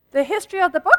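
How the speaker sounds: fast, rushed delivery. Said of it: "Am I going too fast?".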